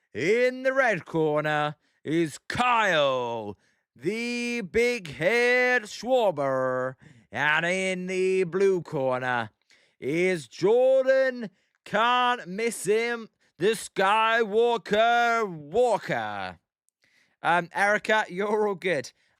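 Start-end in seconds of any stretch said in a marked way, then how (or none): 0.2-16.6 very slow, drawn-out boxing ring announcer call. Streamer introducing a Derby final for viewers, doing a ring announcer impression. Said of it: "I could do my impression".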